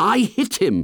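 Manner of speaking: offended, insistent. After the others focus on Jack's wound, Ralph speaks up, indignant. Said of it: "said Ralph indignantly".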